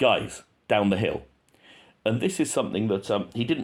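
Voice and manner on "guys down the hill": play-acted firm, strict, no-nonsense tone. Comparing two audio clips, imitating how the second one sounds: strict, assertive order. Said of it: "more strict, more assertive".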